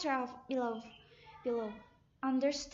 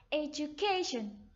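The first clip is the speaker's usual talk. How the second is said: education, third syllable stressed. Teaching word stress, saying education with stress on third syllable 'ca'. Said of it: "stress is the third syllable".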